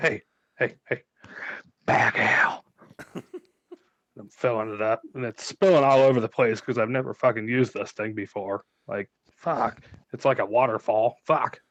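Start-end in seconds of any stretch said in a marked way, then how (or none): 0.0-2.6 hushed, sneaky whispered call. Sneaking into his bag of holding to pour herself ale, whispering. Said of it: "I'm whispering like".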